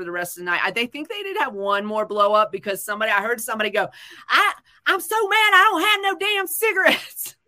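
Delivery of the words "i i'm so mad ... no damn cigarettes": put-on very high, loud, griping Southern accent. Retelling what someone overheard said about cigarettes: imitating a southern accent. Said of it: "they sounded Southern in my head".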